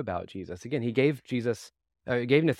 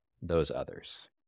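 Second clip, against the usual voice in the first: voice dropped to a lowered, breathy, hushed whisper; 7 semitones lower, 6 dB quieter than usual. Speaker quoting a text that says to lower your voice here: lowered voice. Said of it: "lower your voice".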